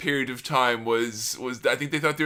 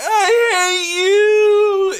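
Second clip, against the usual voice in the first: put-on sobbing shriek, very high and loud; 9 dB louder than usual. Retelling a bride bawling her eyes out at a wedding: imitating someone bawling. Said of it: "Steph is bawling her eyes off".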